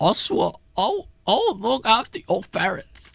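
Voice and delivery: put-on crying voice. Retelling a film scene, imitating Alfred crying. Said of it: "the same thing with Crying".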